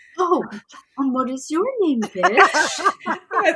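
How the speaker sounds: mock sweet, snide tone, sounding nicer.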